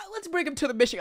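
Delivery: boastful, brash tone. Doing an impression of Trump at his speeches. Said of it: "that's the way Trump talk".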